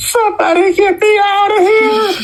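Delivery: squeaky high-pitched voice. Retelling a director stuck upside down in the dark: squeaky Wes Craven voice. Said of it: "you hear a very squeaky voice, and it's Wes Craven upside down going".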